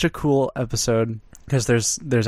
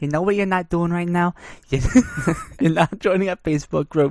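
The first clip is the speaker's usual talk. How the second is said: put-on Italian accent with raised pitch; 5 semitones higher than usual. Redoing a line after saying the accent was wrong, in an Italian accent. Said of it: "that's your Italian?".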